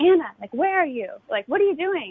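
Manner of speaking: play-acted angry, raging, bursting outburst. Retelling how her father burst in calling for her, mock-raging, demanding. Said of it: "burst open in this rage, like sort of demanding".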